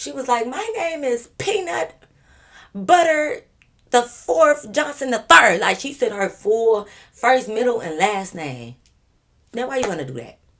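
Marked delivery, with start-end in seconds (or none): 0.5-5.6 loud, proud, high-pitched delivery. Retelling how Peanut gave her name to an officer: imitating Peanut saying it loud and proud. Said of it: "loud and proud as if this bitch ain't twenty".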